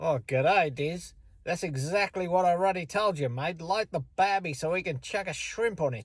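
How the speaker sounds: put-on Australian accent. Showing how people in Australia might say it; Australian accent. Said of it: "in bloody Australia, they may say".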